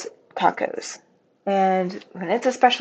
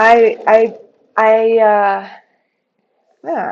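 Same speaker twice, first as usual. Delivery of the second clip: stammering, much louder; 4 dB louder than usual. Speaker talking about shops they like, stuttering. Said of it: "I'm stuttering".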